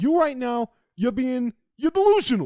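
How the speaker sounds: put-on Jersey Shore New Jersey accent. Asked to say a word in a Jersey accent, giving it a try: Jersey Shore accent. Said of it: "Give me your best delusional in like a fucking Jersey Shore".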